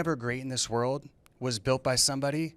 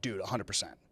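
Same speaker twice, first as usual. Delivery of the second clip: acted-out confident, certain tone; 4 semitones lower, 7 dB quieter than usual. Retelling how a certain prospect answers about the plan: imitating a certain prospect. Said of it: "They'll say it like that".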